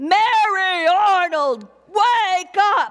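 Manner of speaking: very slow, drawn-out yell with Mary stretched long. Retelling being woken during a storm, imitating husband yelling. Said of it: "my husband yelling".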